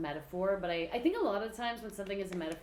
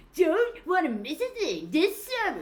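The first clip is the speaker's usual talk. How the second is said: very loud, very high, drawn-out booming monster truck announcer; 10 semitones higher, 9 dB louder than usual. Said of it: "sounds like a Monster Truck commercial".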